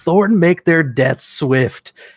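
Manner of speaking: speech cut off into high, loud scream. Recapping a battle scene, acting out a man screaming the last line of his prayer. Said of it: "just screams out the last line".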